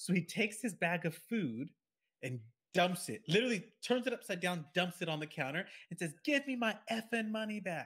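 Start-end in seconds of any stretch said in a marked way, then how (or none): 6.2-7.9 play-acted, pitched-up, irate screaming at full volume. Speaker retells an irate man dumping his food bag, imitating someone screaming. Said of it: "he's screaming at the top of his lungs".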